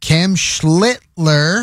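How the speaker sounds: slow, deliberate, drawn-out delivery. Recapping last night's game, saying a player's name slowly. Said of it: "I say that slowly".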